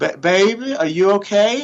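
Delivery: gentle, genteel Southern voice, high and slow. Retelling his mother leaning over him on the sidelines; soft genteel Southern voice. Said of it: "real soft, genteel Southern voice".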